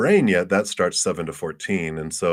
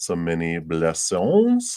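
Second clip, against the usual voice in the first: poor put-on French accent, sing-song. Ending a reading for someone, the speaker signs off in a bad French accent. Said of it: "That was kind of a French accent".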